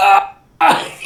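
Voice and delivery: cry of pain. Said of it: "and I'm like".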